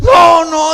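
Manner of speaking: upset, loud, high-pitched protesting tone.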